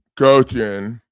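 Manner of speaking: creepy, low-pitched voice. Introducing a lawsuit center to viewers, in a creepy low voice. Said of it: "that was my creepy low voice".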